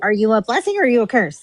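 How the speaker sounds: heated, ranting, going-off delivery. Retelling how Giggles went off on Laura: imitating Giggles going off. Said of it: "Giggles went off on fucking Laura".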